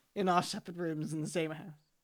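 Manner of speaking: ordinary talk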